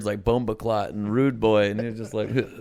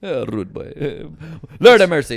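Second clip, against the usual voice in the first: thick, loud put-on Jamaican accent; 5 semitones higher, 7 dB louder than usual. Retelling own joke from a late-night taping: put-on Jamaican-style accent. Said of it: "I threw the accent on".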